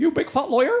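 put-on West Country accent, very high pitch. Joking that lawyer sounds like liar, in a West Country accent. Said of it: "liar with a West Country accent".

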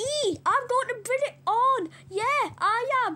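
tiny pig character voice. Playing a pig in a standoff with Leonard, in a mini pig voice. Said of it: "you finally got your mini pig voice".

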